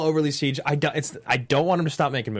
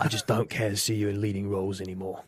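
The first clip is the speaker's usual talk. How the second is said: very low, deep, growled put-on voice; 7 semitones lower, 5 dB quieter than usual. Asked by another speaker to do a Jason Statham impression: Jason Statham impression. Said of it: "Do you wanna do your best Jason Statham impression?".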